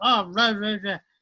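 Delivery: put-on furious, angry swearing in a British accent. Retelling a fighter leaving the after party: imitating swearing in British accent. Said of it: "swearing his head off, British accent".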